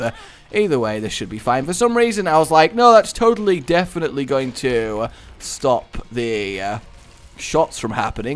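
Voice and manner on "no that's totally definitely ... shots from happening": ordinary talk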